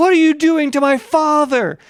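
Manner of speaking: mock, very high-pitched, shrieking screamed voice. Retelling a son showing up at his father's autopsy, imitating a man screaming. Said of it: "he's like screaming".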